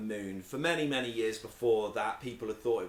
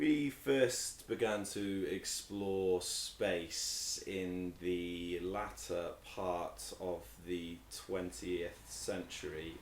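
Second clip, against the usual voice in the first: very slow, low, deliberate, dragged-out pace; 5 semitones lower, 8 dB quieter than usual. Starting a one-minute talk in a speaking game, speaking very slowly. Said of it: "I'm just trying to speak really slowly to buy myself time".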